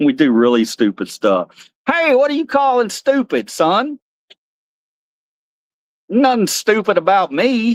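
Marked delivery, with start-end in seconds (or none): 1.9-7.7 unpolished cowboy character voice, pitched up. Answering a question as Cowboy Carl, Cowboy Carl voice. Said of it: "I think we got to work on your voice".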